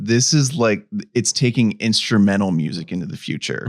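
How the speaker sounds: ordinary talk, nothing marked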